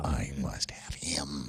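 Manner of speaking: very deep, slow, drawn-out demonic voice. Acting out seeing a guy and wanting him: demonic voice. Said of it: "with that demonic voice".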